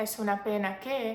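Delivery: plain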